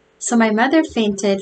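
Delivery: ordinary delivery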